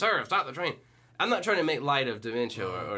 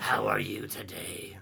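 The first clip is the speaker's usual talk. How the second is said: deep, gravelly, creaky voice; 5 semitones lower, 3 dB quieter than usual. Imitating a woman at the counter greeting: Harvey Fierstein voice. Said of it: "Exactly that voice".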